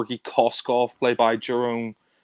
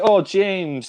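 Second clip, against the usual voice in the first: jovial, cheerful voice pitched up high; 7 semitones higher than usual. Imitating the film villain Georgy Koskov greeting James: jovial Georgy Koskov voice. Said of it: "very, very jovial".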